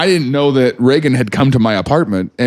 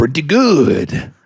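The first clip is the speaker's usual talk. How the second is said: poor, clumsy put-on pirate accent. Asked how good their pirate accent is, answering in a bad pirate accent. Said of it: "That was not good".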